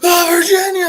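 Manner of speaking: play-acted frantic outburst, very high, loud freaked-out cry. Retelling a scene where a character wakes up in a car: imitating someone freaking out. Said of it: "he's freaking out".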